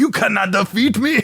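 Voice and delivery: terrible put-on Russian accent, very high. Imitating a movie villain's line: heinous Russian accent.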